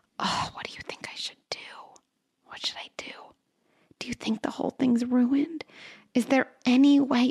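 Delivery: soft, intimate whispering voice. Showing how she alternates into a whisper voice, whispering. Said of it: "I love using a whisper voice".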